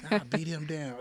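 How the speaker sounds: ordinary delivery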